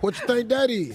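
put-on talking like a very old man. Retelling what the old boyfriend asked on FaceTime: imitating an old man talking. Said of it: "when you real old, it come out".

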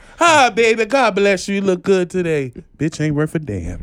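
put-on elderly, old grandmother voice. Acting out what a grandma says to a person and behind their back, imitating grandma. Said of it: "That was her".

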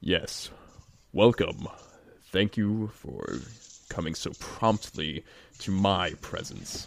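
grand, imposing voice. Game master voicing a voice from the floor welcoming the players, booming voice. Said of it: "a booming voice emanate from it".

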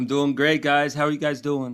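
put-on New York tough-guy accent. A show's guest answering the hosts' greeting in a fake tough new york accent. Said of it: "He's putting on a New York man. Accent to sound tough".

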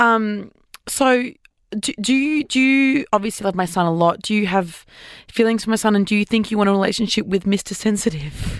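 ordinary talk, nothing marked

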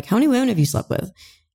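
playful, half-joking, high teasing tone. Recounting a question once put to the man they were dating: retelling a joking question. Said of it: "I was like jokingly like".

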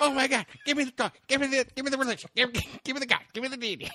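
manic, overexcited, hyper, very high-pitched babble. Acting out a hyper-religious ancient person begging for God: acting hyper. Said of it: "Calm down! You're so fucking hyper".

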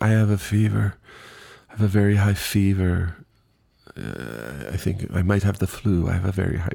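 put-on vague accent, drawn-out "I". Retelling a woman in line answering a clipboard question, in an unplaced put-on accent. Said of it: "I don't know what accent I'm doing".

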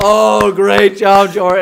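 mock dead-serious, very loud, slow, drawn-out delivery. Retelling how the whole gym congratulated a player, mock-serious praise. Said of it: "And they're all serious too".

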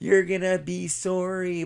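mock sobbing, high, tearful crying. Retelling a car ride with Dad as a kid, imitating own past crying. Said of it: "And I'm still going crying".

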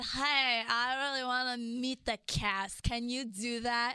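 put-on, mock-drunk, tipsy voice. Retelling a drunk text to a contact, asking to meet the cast, mock-drunk voice. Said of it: "You had a drunk voice as you texted?".

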